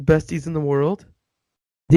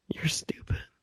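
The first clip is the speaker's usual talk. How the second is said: soft, unvoiced whisper. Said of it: "I'm whispering this".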